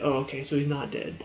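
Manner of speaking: ordinary delivery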